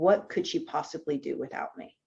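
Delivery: put-on deadpan delivery. Retelling what the soon-to-be ex said at a meeting: imitating someone deadpan. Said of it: "he flat out said, deadpan".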